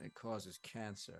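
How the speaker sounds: grim, dour, very hushed, quiet murmur. Retelling a TV scene, quoting a cynical guy: imitating a dour, serial killer-esque tone.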